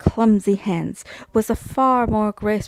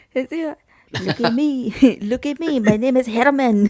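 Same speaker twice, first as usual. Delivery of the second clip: put-on Parisian French accent; 3 semitones higher than usual. Asked by the group for an example, showing off a Parisian French accent. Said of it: "Can we get an example of a Parisian accent?".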